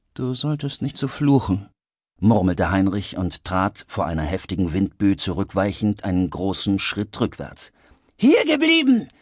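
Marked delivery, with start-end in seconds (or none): 8.2-9.1 very high, piercing, shrill scream. One character orders another not to leave, screaming. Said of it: "schrie George".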